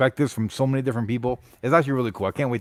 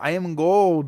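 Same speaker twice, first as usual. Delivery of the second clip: put-on Scottish accent, higher; 4 semitones higher than usual. Quoting Austin Powers films in conversation, the speaker uses a Scottish accent. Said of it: "great Scottish accent you got there".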